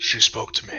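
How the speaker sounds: whispered, hushed tone. Voicing a character speaking to a companion: whispered, hushed tone. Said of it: "in a, a whispered or hushed tone and say".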